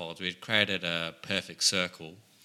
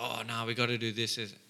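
ordinary talk, nothing marked

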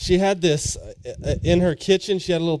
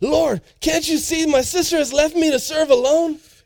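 acted, very high, frazzled, put-upon, stressed voice; 11 semitones higher than usual. Acting out Martha complaining to Jesus: acting out stressed Martha. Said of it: "All stressed".

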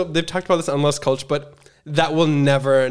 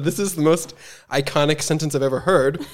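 ordinary delivery

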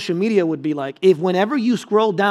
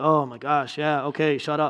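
mock-annoyed toddler voice, lower, quieter, slower; 5 semitones lower, 6 dB quieter than usual. Retelling a two-year-old's reaction to being talked to in the car, imitating a fed-up toddler. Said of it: "you can just tell she's not having it".

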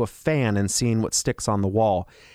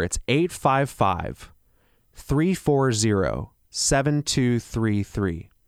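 speaking a little more slowly. Repeating information for listeners, a little slower. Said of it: "I'll say that a little slower".

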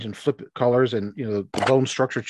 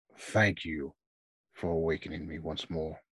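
very deep, very low and very quiet bass voice; 8 semitones lower, 10 dB quieter than usual. Narrator voices an awakened presence thanking the players, in a very deep bass voice. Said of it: "you hear a very deep bass uh, voice".

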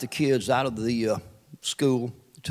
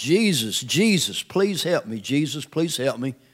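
loud, desperate crying out, hollering. Retelling a man's story of his truck window blown out, acting out his hollering. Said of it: "so I started hollering".

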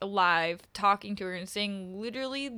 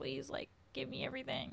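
mock pouting like a child, higher and quieter; 5 semitones higher, 11 dB quieter than usual. Retelling how a film character acts when others care for her: imitating a pouty childlike manner. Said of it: "acts like this child".

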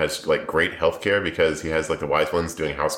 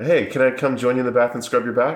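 playful, cheeky teasing voice; 7 semitones higher, 3 dB louder than usual. Describing a book character's behaviour: imitating Min teasing. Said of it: "teasing thing".

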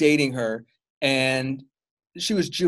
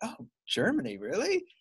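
play-acted bothered, doubtful, very high and soft; 10 semitones higher, 8 dB quieter than usual. Speaker quotes an ex reacting on hearing Germany: retelling a bothered reaction. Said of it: "she was bothered by the fact".

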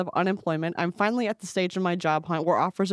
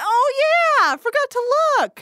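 very high, loud, squeaky goofy doctor voice. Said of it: "And he goes".

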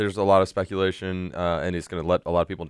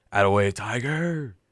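rowdy, excited group cheering scream; 3 semitones higher than usual. Retelling a dorm group cheering a Masters win: imitating people screaming. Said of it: "just screaming".

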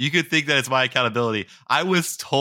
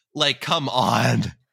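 normal talking voice

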